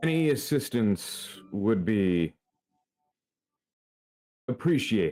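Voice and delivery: voice trailing away, fading into the distance. Narrating a scene where a character calls out while walking away; voice fading into distance. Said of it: "he starts to get further and further away as he speaks".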